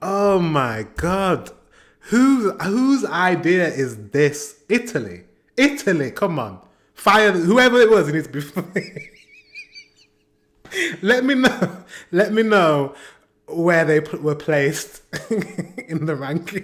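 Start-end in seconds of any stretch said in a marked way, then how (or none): 8.1-16.6 giggling and laughing through the words. Asking viewers where a performance placed in the ranking, giggling while talking. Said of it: "I've got the giggles now".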